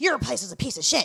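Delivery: mock-angry heated tone. Retelling a heated argument with a woman who called OSHA on him; mock-angry heated argument. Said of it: "We were going at it".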